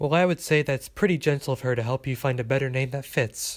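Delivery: ordinary delivery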